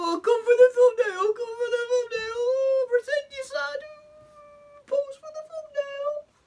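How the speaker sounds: put-on scornful, derisive mom voice, very high. Mocking how the parent pushed the crying child to pose: mocking imitation of the parent. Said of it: "and you're just like".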